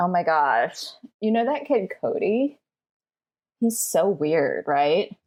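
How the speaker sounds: conspiratorial, gossipy voiced stage whisper. Voicing a character who starts half-whispering gossip at the lunch table: half-whispering gossip. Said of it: "start whispering".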